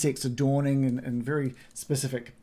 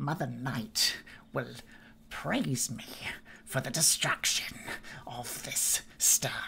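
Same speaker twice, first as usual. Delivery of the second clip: put-on old woman's whisper, barely audible, hushed; 7 dB quieter than usual. The narrator voices an old woman heard on the edge of perception, in a quiet Baba Lysaga voice. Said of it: "this old woman's voice, which is just quietly, just on the edge of perception".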